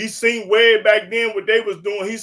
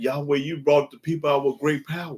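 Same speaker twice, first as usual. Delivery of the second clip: low put-on role voice, lower and quieter; 6 semitones lower, 5 dB quieter than usual. Reading a Bible passage with a partner, voicing the Moses role: low voice as Moses. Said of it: "I'm talking low like because I'm playing the Moses role".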